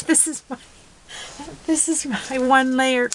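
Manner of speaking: high-pitched talking, words breaking through laughter. Presenter showing a one layer card on video, unable to stop: laughing while talking. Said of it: "I can't stop laughing".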